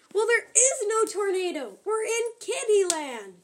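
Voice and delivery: high, loud yell. Narrator reads a character answering another's tornado talk, yelling. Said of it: "Yelled Biddy".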